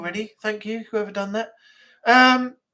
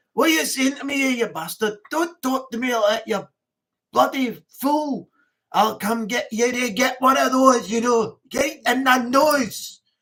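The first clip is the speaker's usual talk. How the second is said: put-on Scottish accent. Showing the banter he does with people he knows well, put-on Scottish accent. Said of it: "when you come across like Scottish people".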